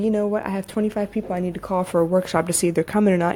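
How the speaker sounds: plain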